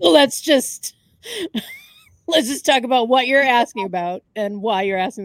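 loud delivery, laughing through the words.

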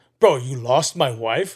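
put-on angry tone. Retelling how one man confronted another; imitating an angry demand. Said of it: "getting like hella pissed off".

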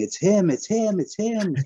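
mock shrill repeated scream, very high, slow. Telling how a grocery store cashier pointed at him: retelling a cashier's screaming. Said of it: "started screaming".

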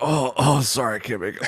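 mock ill-sounding voice. Acting out calling the boss to skip work: fake sick voice. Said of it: "you sound mad sick on the, on the voicemail".

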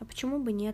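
ordinary delivery, nothing marked

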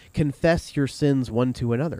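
ordinary talk, nothing marked

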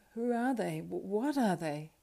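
horrified, shuddering, shivering voice. Turning to his companion behind him, a traveler asks, shuddering.

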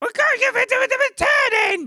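cranky puppet voice pitched very high.

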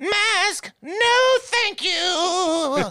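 very high pitch with "you" stretched out. Joking about a cave haunted by drunk Karens, doing a ghost Karen voice. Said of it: "That's kind of like a ghost Karen voice".

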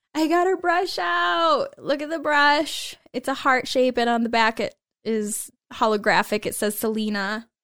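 tearful, crying through drawn-out words. Showing off a brush before brushing her hair, tearful and crying. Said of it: "I have like whole real tears falling down my face right now".

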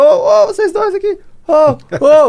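shrill, very high, loud shout. A therapist retells running after two people whose names he didn't know, retelling shouting after them. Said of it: "Gritando pra".

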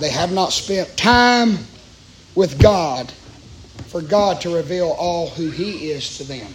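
slow, low, deliberate, word-by-word delivery. Speaking to listeners about God, stressing a point, speaking slowly. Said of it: "I'm trying to say it slow".

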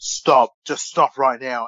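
put-on scolding teacher voice. Retelling a teacher telling off two boys, imitating a teacher telling off. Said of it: "the teacher's like telling these two boys off".

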